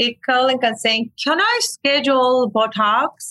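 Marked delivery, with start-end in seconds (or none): 1.2-3.3 imitated heavy British accent, higher pitch. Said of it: "British accent".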